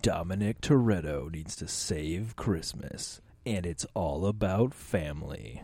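movie trailer announcer voice. Pitching a holiday movie idea: movie trailer announcer voice. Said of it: "try to do it as, like, the announcer for movies".

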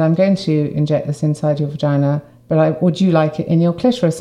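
normal talking voice

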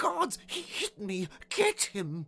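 very high, shrill, screeching cry. Narrator reads the king calling his guards after a lion knocks him down, screeching. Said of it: "The king screeched".

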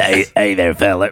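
collect-call phone voice. Doing a requested prison phone call voice.

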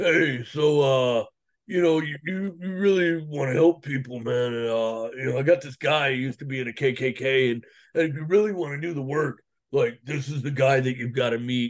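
bass-deep, really deep man's voice. Retelling what Arno told him, imitating Arno's deep voice. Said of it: "he's got this really deep voice".

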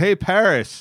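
high, called-out shouting yell. Recounting calling out to a celebrity among photographers, retelling a yell. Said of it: "And so I yelled out".

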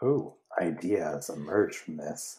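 sinister, very low, very quiet, hushed drawl. Reacting to a band's thank-you on air, the speaker says it in a sinister tone. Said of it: "Why'd I say that so sinisterly?".

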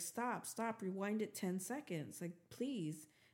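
ordinary delivery

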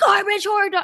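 fake shouting. Showing a TikTok trend of saying a phrase in emoji tones: mock yelling.

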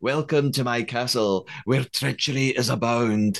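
put-on, exaggerated Scottish accent. A Scottish speaker shows how Alan says his welcome, in an Alan Cumming voice, very amplified Scottish. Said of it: "I pretending to be Alan sound like".

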